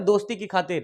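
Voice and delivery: plain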